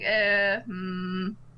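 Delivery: ordinary talk, nothing marked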